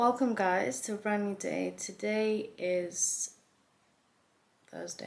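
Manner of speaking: croaky, hoarse voice. Welcoming viewers to a brand new day: croaky voice. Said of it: "A very croaky voice".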